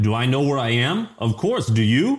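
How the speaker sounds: bad, horrible, fake put-on Russian accent. Retelling what a man says to a guy, in a horrible Russian accent. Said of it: "like in this like horrible Russian accent".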